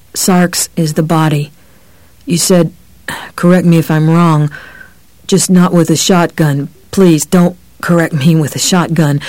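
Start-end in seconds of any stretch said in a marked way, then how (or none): none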